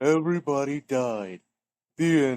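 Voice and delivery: slow, drawn-out cartoon character voice. Retelling telling the Ugly Barnacle story to someone: voice from SpongeBob. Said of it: "Did you say it in that voice?".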